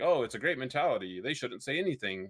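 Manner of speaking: ordinary talk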